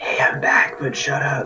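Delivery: hushed whisper under the breath. A player voices their character's line in a tabletop game, whispering. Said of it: "I'm going to whisper just like".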